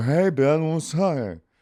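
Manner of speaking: put-on thick slurred speech. Retelling how the words actually came out: imitating own slurred speech. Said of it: "But I go".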